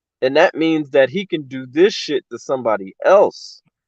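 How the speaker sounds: ordinary delivery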